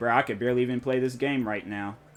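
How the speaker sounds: ordinary delivery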